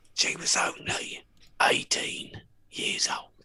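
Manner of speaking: put-on very slow, gravelly, raspy old man voice. Correcting another speaker's impression, more gravelly and older: gravelly older Michael Caine impression. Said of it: "it's more gravelly. It's older".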